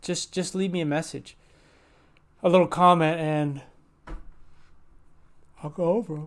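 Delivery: yawny voice, talking through yawns. Video creator asking viewers to leave comments, yawning while talking. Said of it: "I don't know why I'm yawning so much".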